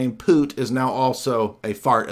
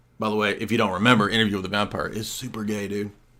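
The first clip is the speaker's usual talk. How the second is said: ordinary talk, nothing marked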